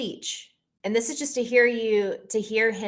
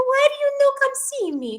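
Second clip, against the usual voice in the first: put-on very high Greek grandmother voice; 5 dB louder than usual. Retelling what the speaker's yaya says on every call, in a high-pitched yaya imitation. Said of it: "the high pitched and, like, the so my yaya".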